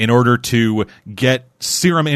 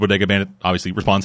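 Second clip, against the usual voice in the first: ordinary delivery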